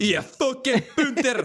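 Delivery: put-on, very high Glaswegian accent. Friends discussing voices for a Bond scene, in a Glaswegian accent. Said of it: "Nice Glaswegian brug".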